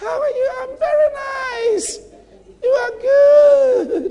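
very high, dainty, drawn-out lady voice. Describing a woman with a wasp waist, the speaker acts out her talk, imitating a soft-spoken woman. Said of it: "Soft spoken".

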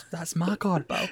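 unconvincing, bad, put-on Scottish accent. Asked to imitate a film's dubbed-in accent, the speaker does a scottish accent impression. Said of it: "give us a wee impression of this Scottish accent".

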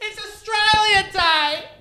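mock very high, loud shout. Recalling how the listener's sister shouted it at all the patrons, retelling a shout. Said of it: "You're shouting it at all the patrons".

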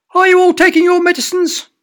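very high, very loud, shrill piping voice. Reading a story, the inspector questions the family, in a high-pitched voice. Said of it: "He spoke with a high-pitched voice like that".

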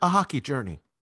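put-on public radio documentary host delivery. Repeating your phrase when asked what you said: NPR voice. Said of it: "I'm trying to use my NPR voice".

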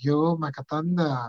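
put-on Vietnamese-accented speech. Retelling what a woman said on seeing the speaker again, imitating a Vietnamese accent. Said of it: "In her Vietnamese accent".

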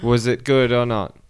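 ordinary delivery

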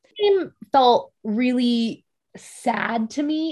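very slow delivery, voice breaking partway through. Talking with a co-host about a game, say it as your voice cracks. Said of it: "Voice crack".

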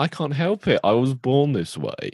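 high sing-song voice, drawn out and slowly swooping. A speaker mocks a Doctor Who character's forced flirting with an Adam impression. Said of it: "That's my impression of Adam".

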